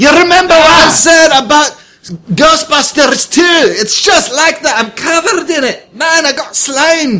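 shouting. Covered in slime after a rescue attempt, calling to a companion, yelling. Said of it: "There's no need to yell".

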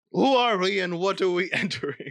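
put-on French accent with a laugh. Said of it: "It's too distracting. The look, the sound".

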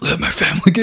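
villainous cartoon voice. Retelling what someone said in a voice: Dr. Claw voice. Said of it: "that's Dr. Claw".

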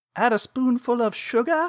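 put-on British accent, very high and loud. Retelling how a son drops lines at dinner: imitating a British accent. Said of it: "a British".

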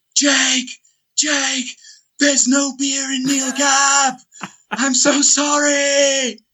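very high mock scream, drawn-out sorry. Speaker retells a man's brother running after him: imitating brother screaming. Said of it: "comes screaming after me".

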